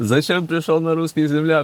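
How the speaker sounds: put-on yelling voice. Speaker recalls the enemy storming his positions; retelling an enemy's shout. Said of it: "кричав".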